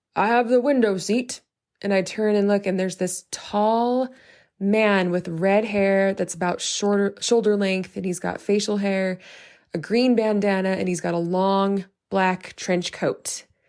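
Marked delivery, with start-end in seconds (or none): 0.2-1.4 put-on rough, gruff, older-sounding man's voice. Speaker recounting a stranger claiming the window seat, gruffer, older voice. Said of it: "like this kind of gruffer, older voice".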